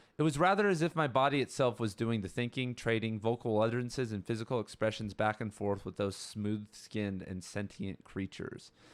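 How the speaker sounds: ordinary delivery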